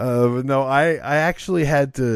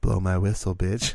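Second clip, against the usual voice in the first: ordinary talk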